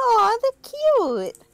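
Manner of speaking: giggling while speaking. Voicing a character who sees cute creatures: giggling while speaking. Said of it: "She, like, giggles. She's like".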